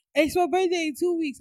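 put-on, very high, shrieking, screamed outburst. Retelling what was said to Bae last night: imitating own scream. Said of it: "I just screamed".

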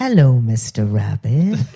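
very low, sultry, sexy come-on voice. Recalling a line from a rabbit advert: imitating a sexy voice. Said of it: "I think it's too sexy".

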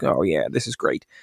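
creaky, rough-edged put-on voice. Retelling how George saw a film and picked him: George Lucas impression. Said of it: "that was a good impression there, mate".

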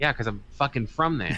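plain

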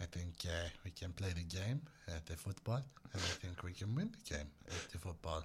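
distorted, very low, very quiet footballer voice. Sharing a memory for England fans, doing a distorted put-on footballer voice. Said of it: "I have to distort my body for the sound".

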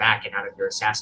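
ordinary delivery

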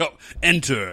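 dead-earnest, solemn, very serious delivery. Retelling a scene where Kaku sends Ryu into a room: imitating Kaku being serious. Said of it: "He's, like, real serious about it".

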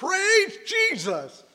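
high, slow yell at the top of the voice.

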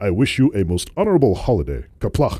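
deep, low-pitched voice. Asked for a Worf impression to end on, the speaker gives a Worf impression. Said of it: "Can I hear your Worf impression?".

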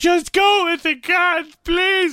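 mock tearful begging, very high and drawn out. Retelling a plea to someone being arrested: imitating someone crying. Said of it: "she was sitting down there beside him crying".

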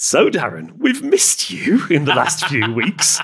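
jokey, hammed-up, high, swooping cartoon-wolf voice. Retelling what a man said to the speaker, in a joke cartoon-wolf voice. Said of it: "a joke version of a cartoon wolf".

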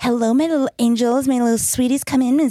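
high welcoming voice. Show the other speaker, who thinks she is British, how she talks, in a Baba Jolie impression. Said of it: "She's like".

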